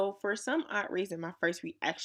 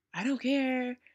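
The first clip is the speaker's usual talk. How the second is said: high-pitched, angry, dismissive tone; 6 semitones higher than usual. Retelling how a thief answered a woman he stole from, imitating an angry man. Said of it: "He was just angry".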